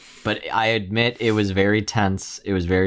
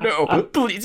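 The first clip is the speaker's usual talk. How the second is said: mock tearful, very high, sobbing crying plea; 11 semitones higher than usual. Retelling a Marvel scene where Eddie begs, imitating Eddie crying, pleading. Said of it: "he's crying".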